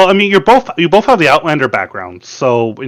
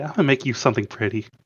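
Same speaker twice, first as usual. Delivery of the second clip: hushed, soft, secretive half-whisper; 4 semitones lower, 11 dB quieter than usual. Playing a character in a role-play scene, the speaker half-whispers to another character after a hug. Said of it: "she whispers to Nathalie".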